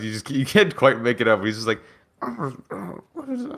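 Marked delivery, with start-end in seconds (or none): 2.2-3.6 high, soft moan, traumatized and deeply shaken. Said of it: "he just sounds, like, traumatized".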